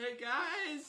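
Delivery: shrill, loud, very high shouting yell. Calling out to the other players in the game: shouting. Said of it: "Don't shout".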